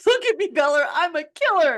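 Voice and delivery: loud scream, very high. Retelling the scene where he reveals himself to her: imitating Edward screaming. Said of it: "I love it when he's screaming at her".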